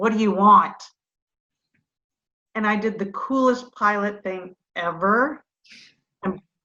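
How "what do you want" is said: put-on angry man voice, louder. A pilot retells a man approaching him, imitating an angry man. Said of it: "angry look on his face".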